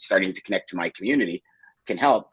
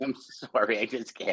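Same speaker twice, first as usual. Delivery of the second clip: words broken up by laughter; 5 dB quieter than usual. Reacting to another speaker's story, laughing while talking. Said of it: "I can't stop laughing".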